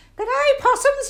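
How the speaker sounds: shrill, booming, twangy falsetto, belted. Voice teacher showing a falsetto with twang: Dame Edna Everage falsetto. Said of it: "Now that is false, her falsetto, his falsetto, Barry Humphrey's falsetto, with a lot of twang".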